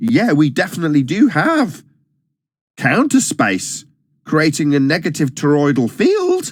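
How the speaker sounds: bright, upbeat, positive lilt with rising inflection. Phrasing a nonsensical claim with a positive upward inflection. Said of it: "positive upward inflection, giving it the".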